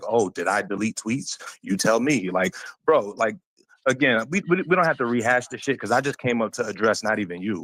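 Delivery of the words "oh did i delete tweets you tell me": put-on, dripping with sarcasm, snide. Retelling what another speaker said earlier: imitating someone being sarcastic. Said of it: "you were being sarcastic with that as well. You were saying".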